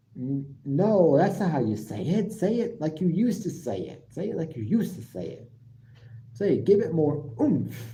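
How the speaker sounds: usual speaking voice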